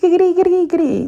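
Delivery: very high, loud, weird spoken giggle. Acting out a chat between best friends: put-on giggle said as words. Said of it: "do a little giggle, but saying it weird".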